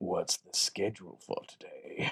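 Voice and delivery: breathy, drawn-out whisper. Retelling what an actor in an elevator said to his handler: imitating Tony Todd's voice. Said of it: "his real voice is basically that voice".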